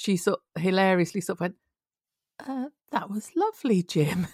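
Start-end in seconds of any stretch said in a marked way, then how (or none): 2.5-4.3 mock slightly thrown, puzzled, bewildered tone. Retelling how Fallon answered a speech: imitating Fallon's slightly bewildered tone. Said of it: "in a slightly bewildered tone".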